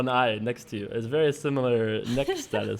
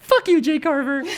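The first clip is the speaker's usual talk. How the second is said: very high-pitched, shrill nerd-rage rant; 6 dB louder than usual. Speaker shows a co-speaker the voice he sometimes likes to do: nerd rage voice. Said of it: "my nerd rage voice that I sometimes like to do".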